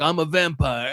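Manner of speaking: mock tough guy, posing cool, trying to sound cool. Retelling a news show appearance, imitating someone trying to sound cool. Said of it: "was trying to sound cool about it".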